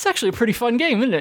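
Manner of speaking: grudging, quick, high voice.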